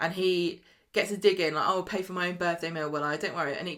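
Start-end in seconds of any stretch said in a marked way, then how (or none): none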